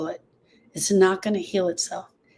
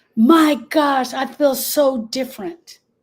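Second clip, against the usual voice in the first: put-on screaming voice, higher and louder; 5 semitones higher, 5 dB louder than usual. Retelling a phone call's reaction to good news: imitating Erica screaming. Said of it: "she was screaming at the top of her lungs".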